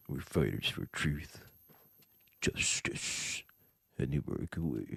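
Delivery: hushed, breathy, fake deep child voice. Mocking a kid in a film as too cartoonish, in his put-on deep voice. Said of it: "that deep voice he was trying to put on as a kid".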